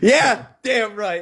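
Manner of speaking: high-pitched hollering yell. Agreeing loudly in a group argument about the best language: yelling. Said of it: "I need to stop yelling".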